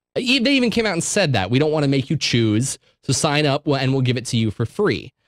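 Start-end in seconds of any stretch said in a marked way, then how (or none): none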